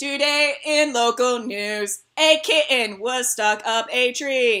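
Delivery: slow, put-on electronic talking-toy voice. Pretending to read local news: Speak & Spell voice. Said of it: "totally in a speak and spell voice".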